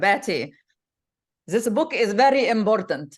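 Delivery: put-on heavy Egyptian accent. Retelling the dad's words about an important book, in a thick Egyptian accent. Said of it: "like thick Egyptian accent".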